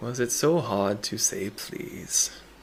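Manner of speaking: put-on low grandfatherly voice. A narrator voices a familiar figure speaking from behind the listeners, low grandfatherly voice. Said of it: "a bit lower, and very grandfatherly. He goes".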